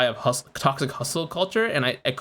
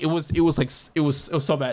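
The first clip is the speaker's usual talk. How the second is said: slow, choked-up voice catching with emotion. Recalling a painful twenty-first birthday to friends, choked up. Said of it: "kinda getting their chin up".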